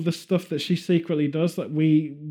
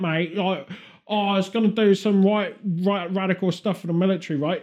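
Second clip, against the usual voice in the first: posh dropped for a full chav accent; 3 semitones higher than usual. Joking with a co-speaker about how the Queen really speaks, doing the Queen as a chav. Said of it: "That's how the Queen really speaks".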